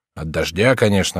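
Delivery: ordinary delivery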